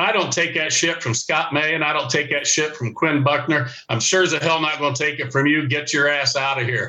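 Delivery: ordinary delivery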